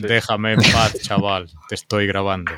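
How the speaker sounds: low talking-car voice. Joking that a camera car answers back: KITT voice. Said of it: "O te sale la voz de Kit".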